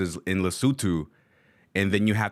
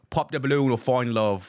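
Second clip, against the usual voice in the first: put-on British accent; 4 semitones higher than usual. Showing viewers how the producer sounds, imitating BM's British accent. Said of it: "That's what he sounds like".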